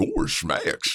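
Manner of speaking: put-on goofy cartoon dog voice. Asked for a Goofy impression by a friend: Goofy voice. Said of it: "How, how about Goofy?".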